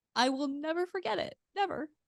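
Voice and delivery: weepy, very high voice, speaking through tears. Recalling people who drove hours just to show up, tearful. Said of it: "I don't not really apologize for my tears".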